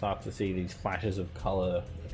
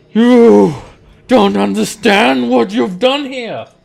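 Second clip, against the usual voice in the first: booming commander voice, much louder, higher; 13 semitones higher, 16 dB louder than usual. Game master voicing the angry Amnesu face to face with the players, booming angry voice. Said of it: "This booming telepathic voice floods all".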